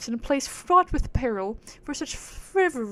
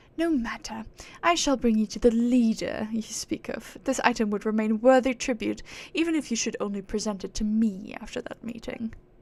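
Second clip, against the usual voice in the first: put-on posh, aristocratic upper-class British accent. Voicing a high and mighty game character: british aristocrat accent. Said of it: "give her a British accent like the fucking aristocrats".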